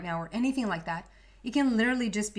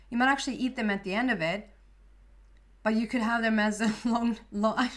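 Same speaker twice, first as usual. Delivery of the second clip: talking while laughing, words broken up by giggles. A speaker explaining something to listeners, laughing while talking. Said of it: "I'm sorry that I'm laughing".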